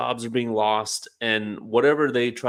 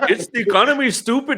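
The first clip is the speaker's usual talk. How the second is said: put-on Indian accent, very high-pitched and loud; 12 semitones higher, 6 dB louder than usual. Repeating a campaign manager's famous words, imitating an indian accent. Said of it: "That's the Indian version".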